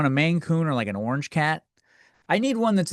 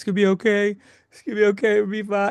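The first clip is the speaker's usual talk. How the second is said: put-on soothing, reassuring voice, high and through tears; 5 semitones higher than usual. Retelling a pep talk to the cat before a vet trip, imitating crying. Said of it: "I was crying and I was like".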